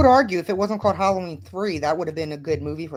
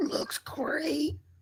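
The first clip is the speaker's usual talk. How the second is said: soft, breathy whisper, all breath; 11 semitones higher, 10 dB quieter than usual. Saying what someone would say about a drawing: imitating Gilmer. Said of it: "as Gilmer would say".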